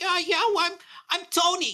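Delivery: put-on very high-pitched, whiny New York accent. Describing a voice actress first heard in a game, imitating her whiny New York voice. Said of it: "like it really like whiny".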